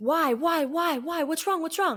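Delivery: put-on frantic, alarmed voice, high and repeated. Retelling a mother's reaction on the phone: imitating a panicked voice. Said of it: "the panic in her voice".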